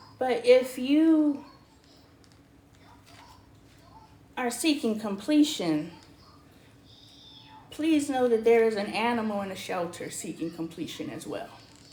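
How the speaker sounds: tearful, choked-up voice, crying through the words. Urging viewers to remember animals waiting in shelters: choked up, crying. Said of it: "Are you crying?".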